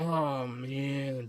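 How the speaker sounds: very soft, dragging drawl with zero enthusiasm. Reacting to the idea of cooking dinner: unenthusiastic. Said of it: "You sound really enthusiastic".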